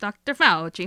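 exaggerated Italian accent. Reading a news story aloud, the speaker says the doctor's name in a Mario-style Italian accent. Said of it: "Love that you made him Mario".

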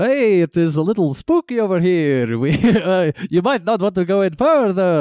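put-on high, kids'-tv vampire character voice. Retelling what a vampire said: Count von Count voice from Sesame Street. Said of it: "I'm kinda doing my Count Dracula, uh, from Sesame Street".

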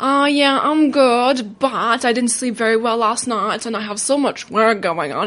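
slow, self-mocking put-on voice. Retelling own answer to a friend asking how things were, mocking own past words. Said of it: "I didn't say it with that voice".

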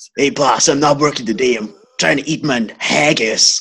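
put-on tough-sounding voice in a Scottish accent. Acting out an invented eighties TV cop show: playing McLeish, invented TV cop. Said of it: "an American cop that's never forgotten his Scottish roots".

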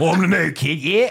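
high, loud mock old cockney man voice, belted out. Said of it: "like a seventy-year-old cockney guy".

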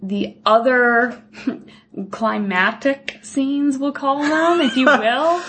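sarcastic air-quote tone. Dismissing a film's big scenes while doing air quotes: ironic air-quote tone. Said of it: "You can hear it in my voice".

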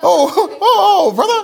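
very high, loud, drawn-out exclamation. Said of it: "it was a [name] voice".

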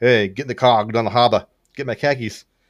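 put-on local Boston accent, put on. Describing a film's bishop who has a Boston accent: put-on Boston accent. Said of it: "with appropriate Boston accent".

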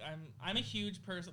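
usual speaking voice

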